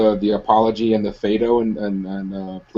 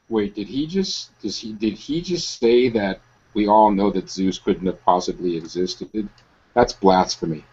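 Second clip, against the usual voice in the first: ordinary talk, nothing marked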